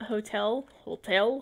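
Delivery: strange pronunciation of "hotel".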